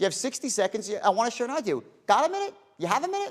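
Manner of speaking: reasonable-man tone, pitched very high. Showing how to ask someone for sixty seconds to share an idea: reasonable man tone. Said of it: "notice my tone".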